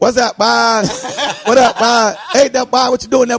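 put-on child character voice. Retelling how a seven-year-old talked like Jerome from Martin. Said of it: "What kid at seven years old be like".

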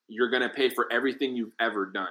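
ordinary talk, nothing marked

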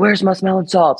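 high yelling. Acting out asking him where her smelling salts are, retelling a yell. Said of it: "but I'm just yelling".

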